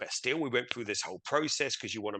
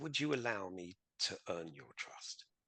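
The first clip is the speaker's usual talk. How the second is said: put-on gentle, very quiet, almost childlike hushed voice; 4 semitones lower, 10 dB quieter than usual. Demonstrating how to ask someone for their trust: very soft, almost childlike. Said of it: "Just soften it like a child almost, and very softly".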